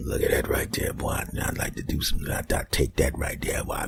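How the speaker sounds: leering, lecherous devil voice, whispered and hushed. Showing how a pervert talks about an attractive woman on TV, devil voice. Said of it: "you get that devil voice".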